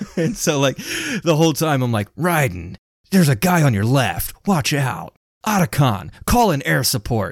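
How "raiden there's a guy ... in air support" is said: silly, stupid put-on action-hero voice. Calling out to teammates during a game, in a stupid Solid Snake impression. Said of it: "doing like all of these stupid Solid Snake impressions".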